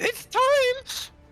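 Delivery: very high, cackling villain voice. Voicing a gnome who points her gun at a player: cackling villain line. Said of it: "she's, like, cackling".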